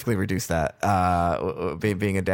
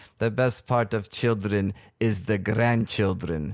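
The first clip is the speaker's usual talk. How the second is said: imitated Eastern European accent. Retelling what their mom always told them, the speaker uses her Eastern European accent. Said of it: "she speaks in an Eastern European accent".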